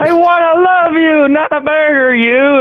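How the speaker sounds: over-the-top theatrical stage delivery. Imagining an actor hamming up a murder scene: over-the-top Shakespearean delivery. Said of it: "just over the top Shakespearean".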